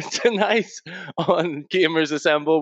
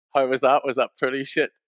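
ordinary talk, nothing marked

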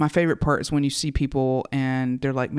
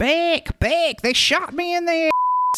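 mock loud, very high, rising, drawn-out, swooping yell. Retelling what a man who had been shot kept shouting, retelling a loud shout. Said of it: "he's saying it so loud".

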